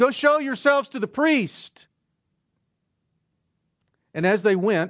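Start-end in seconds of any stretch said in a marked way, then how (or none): 0.0-1.9 mock raised, high calling-out voice. Retelling a Bible scene's command to the lepers, retelling a raised voice. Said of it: "he had to raise his voice".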